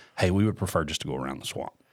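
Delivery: very low, bone-dry, dead-serious deadpan. Retelling a joke request made to a ride attendant: imitating own straight-faced delivery. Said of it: "really straight face".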